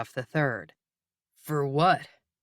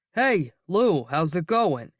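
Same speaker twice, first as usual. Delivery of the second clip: put-on New York mobster accent; 2 semitones higher than usual. Narrator reading a man's greeting to a friend, in his Goodfellas dialect. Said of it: "He asks in his Goodfellas dialect".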